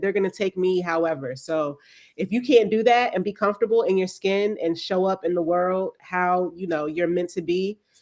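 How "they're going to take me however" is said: usual speaking voice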